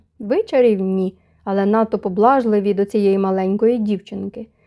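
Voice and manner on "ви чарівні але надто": plain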